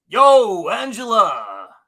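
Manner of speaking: very loud holler with big, swooping pitch swings. Trying the voice again after doubting it: Tony Danza voice. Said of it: "I don't know if I can do him that well".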